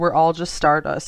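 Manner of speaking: ordinary talk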